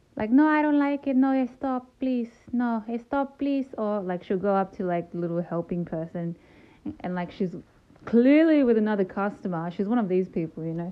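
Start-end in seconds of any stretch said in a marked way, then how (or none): 0.2-3.6 mock fussy complaining voice, higher and louder. Retelling how mom reacts at a facial or foot scrub: imitating her mom complaining. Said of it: "she'll have some comment to say".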